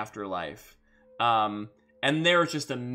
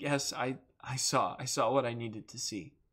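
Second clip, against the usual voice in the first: mock speech through choked-back sobs; 6 dB quieter than usual. Retelling what a woman said in reply, imitating choked-back sobs. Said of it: "through, like, choked back sobs".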